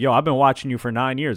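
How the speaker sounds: usual speaking voice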